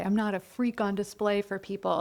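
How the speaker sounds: plain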